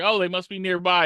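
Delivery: ordinary delivery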